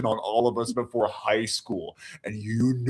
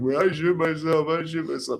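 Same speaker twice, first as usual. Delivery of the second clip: play-acted, pitched up, laughing through the words; 5 semitones higher than usual. Retelling how a classmate reacted: imitating someone laughing while talking. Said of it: "he starts laughing".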